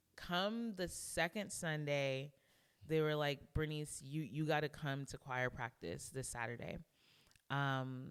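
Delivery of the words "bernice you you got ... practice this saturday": ordinary talk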